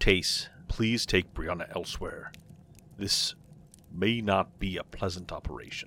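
very low, hushed, grim delivery. A man asking someone to take the apprentice elsewhere, said grimly. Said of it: "he said grimly".

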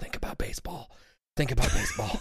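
acted-out under-breath mutter. Recalling a phrase he mutters during sex: retelling an under-breath mutter. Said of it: "has heard me under my breath mutter the phrase".

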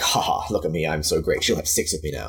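mock smug, self-satisfied gloating voice. Imitating a man pleased with himself after defending women: imitating a smug man. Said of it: "And then he's like".

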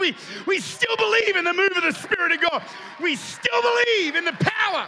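excited, loud, high-pitched shouting. Speaker excited about Pentecost Sunday, telling the listeners, yelling. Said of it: "I know I'm yelling".

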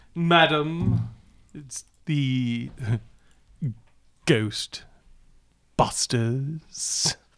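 formal butler voice, announcing style. Playing the butler, announcing the Ghostbusters to the lady of the house: butler voice. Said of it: "Does the butler announce us?".

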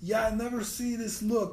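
put-on Russian accent, very high-pitched and loud. Retelling what a man said to him about his look; imitated Russian accent. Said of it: "Keep doing it".

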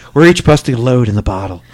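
very low, sultry, seductive put-on voice. Reading a passage from a book aloud in a sexy voice. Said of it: "I'm using my sexy voice".

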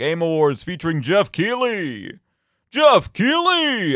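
belted out like a fight announcer. Trying out a voice to announce Jeff Keighley at the Game Awards, Super Smash Brothers announcer voice. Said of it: "I'm trying to do like the Super Smash Brothers announcer voice".

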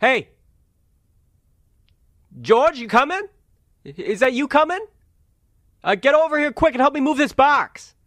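shrill, very high calling-out shout. Game master voicing someone downstairs calling up to george, yelling. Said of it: "you hear someone down there yell".

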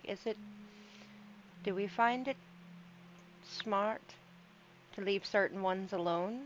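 very quiet. In a game, a player speaks as her character to another character: very quietly. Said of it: "She says it very quietly".

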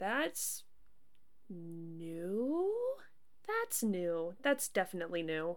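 slow, hushed murmur under the breath, "new" drawn out. Finding a pipe that is on no map, saying under their breath: muttered. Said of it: "I'll just say under my breath".

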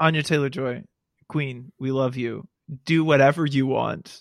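ordinary talk, nothing marked

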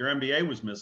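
ordinary delivery

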